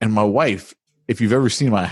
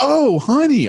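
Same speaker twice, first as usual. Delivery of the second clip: very high, all-cheery, happy voice; 4 dB louder than usual. Speaker retells Jamie greeting them at breakfast, imitating Jamie, all happy. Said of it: "all like happy and stuff".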